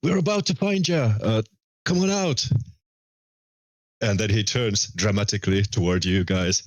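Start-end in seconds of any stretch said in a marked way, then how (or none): 0.0-2.5 yelling, higher pitch. Voicing a character calling for ed toward the foyer: shouting.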